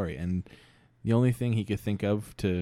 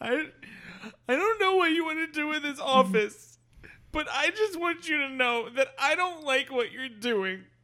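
put-on very high, weepy speech through tears. Acting out a character giving a speech, crying while speaking. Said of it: "he's crying as he's giving his speech".

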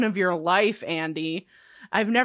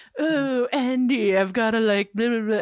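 put-on upper-class, posh New England accent. Acting out a person's mocking remark, in a fake upper-crust New England accent. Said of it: "donning this like fake upper crusty New England accent".

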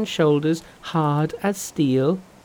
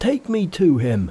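said with a gasp. Pigsy, dropping his rake on hearing of the pilgrim, speaks to Monkey, gasping. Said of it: "he gasped".

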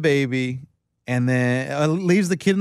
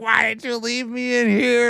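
high, put-on tearful sobbing little-kid voice; 8 semitones higher than usual. Retelling a kid's words after being found in the car: imitating a sobbing child. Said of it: "sobbing, crying".

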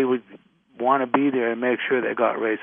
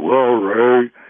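loud, booming put-on voice; 7 dB louder than usual. Retelling how a storyteller went into the John Huston voice. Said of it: "he would go into the John Huston voice".

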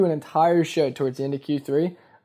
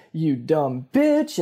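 put-on freaking-out, furious, in-your-face outburst. Acting out a date who freaks at the waiter: freaking out. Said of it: "And she freaks".

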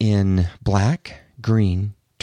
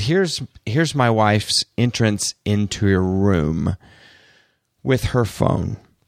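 plain

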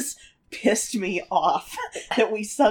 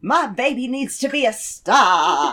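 demanding stage-mother tone, with star drawn out; 4 dB louder than usual. Acting out what the character would say: imitating Mama Rose. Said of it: "she's very much like".

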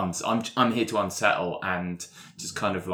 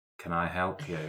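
put-on character voice, quieter; 4 dB quieter than usual. Voicing a character who catches someone snooping: Skinsy voice. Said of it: "You just hear".

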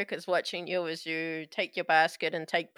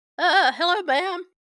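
put-on teenager voice sounding ancient, much higher pitched; 13 semitones higher, 10 dB louder than usual. A pimply eighteen-year-old on duty greets a woman, teenager voice sounding ancient. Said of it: "Why does he sound like a teenager, but also like he's 97?".

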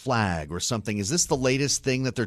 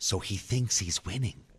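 put-on whisper, quieter; 5 dB quieter than usual. Commenting on news that Putin is misinformed: whispering like Joe Biden. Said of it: "Now I'm whispering like Joe Biden".

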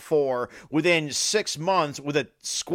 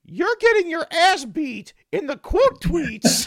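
very high, tiny cartoon mouse voice; 13 semitones higher, 3 dB louder than usual. Describing a video of somebody imitating a cartoon voice, Mickey Mouse voice. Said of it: "imitating the Mickey Mouse voice going".

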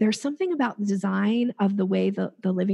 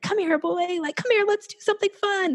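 very high, high-energy calling voice; 11 semitones higher than usual. Demonstrating how people call a dog, in a high-pitched dog-calling voice. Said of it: "you have this like high pitch, like high energy".

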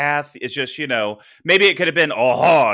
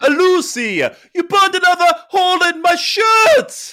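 very high-pitched put-on voice; 4 dB louder than usual. After a friend's bad attempt, the speaker shows a better Ricky Ricardo impression. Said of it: "it's more like".

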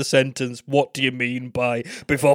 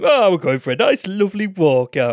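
cutesy, put-on, silly little dog voice; 4 semitones higher than usual. Retelling talking to your dog in the car boot, in a silly little dog voice. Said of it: "In my silly little dog voice".

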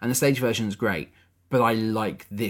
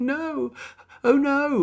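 put-on very high, frail old-woman voice. Act out the film scene where she must walk the plank, in Judi Dench's frail old woman voice. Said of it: "in her frail old woman voice".

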